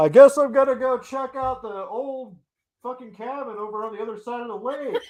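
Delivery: loud, very high, overdone sarcastic delivery. Acting out an imagined scene line from the show: loud and sarcastic. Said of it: "say it all loud and sarcastically".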